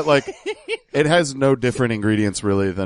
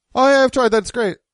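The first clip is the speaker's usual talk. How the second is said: mock-evasive lawyer voice, higher pitch; 14 semitones higher, 4 dB louder than usual. The speaker imagines how the man's lawyer answered: mock-evasive lawyer impression. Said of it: "Let me do my impression of his lawyer".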